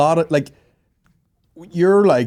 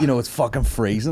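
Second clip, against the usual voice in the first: normal talking voice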